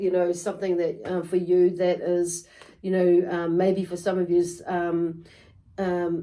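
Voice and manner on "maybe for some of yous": ordinary delivery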